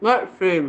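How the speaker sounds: talking with mouth full. Answering what is coming up this week, talking with mouth full. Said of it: "I have a mouthful of cookies".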